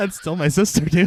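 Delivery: mock high-pitched pleading with laughter.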